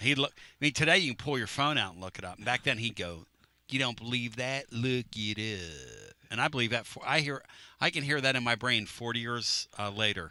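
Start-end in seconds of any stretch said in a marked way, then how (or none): 3.7-6.1 put-on slow, soft Pennsylvania accent. Remembering a high school teacher from forty years ago, imitating a teacher's Altoona, Pennsylvania accent. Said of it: "and that's how he would say it".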